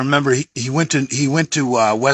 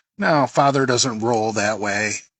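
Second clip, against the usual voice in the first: ordinary talk, nothing marked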